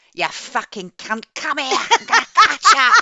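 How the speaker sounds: loud, high, swooping, shrill, booming dramatic tirade. Retelling how an audiobook suddenly switches at chapter one, doing Annie Aldington's mock dramatic outburst. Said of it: "such this dramatic switch from".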